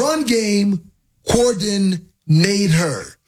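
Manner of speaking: slow, drawn-out enunciation, every word stretched.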